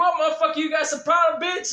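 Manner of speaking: mad, confrontational, in-your-face delivery. Retelling walking over to a stranger in a store: imitating an angry confrontation. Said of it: "went over there all mad".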